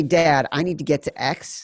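plain

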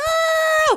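put-on high, loud, excited squeal on "girl".

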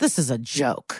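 muttered under breath. Recapping a character walking out of the courtroom, muttering under his breath. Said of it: "under his breath".

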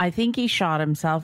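ordinary talk

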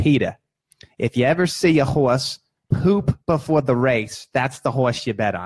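put-on heavy New York accent, laid on thick. Telling a story, quoting his parents who love horse racing: thick New York accent. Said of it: "they're thick New York accents".

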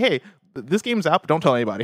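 normal talking voice

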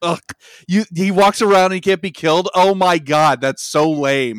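scornful mocking taunt. Retelling how a film's writer-director duo mock fans of the franchise, imitating open mockery. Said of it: "they just mock you openly".

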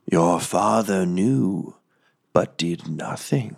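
harsh raspy whisper. Voicing a voice in a character's mind: harsh whisper. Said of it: "harsh whisper that says that".

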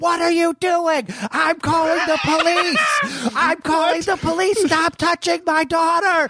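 mock screaming, very high and shrill. Retelling a man flicking the lights and screaming at them during CPR on a doll: retelling a scream. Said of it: "screaming at us like".

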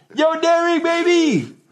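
put-on, very high-pitched, calling-out yell. Retelling yelling someone's name out the window: retelling a yell. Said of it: "I yelled".

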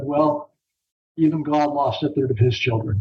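mock deadpan, flat delivery. Retelling a father's joking reply at dinner, imitating a deadpan joke. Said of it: "he was joking, but with just complete deadpan look".

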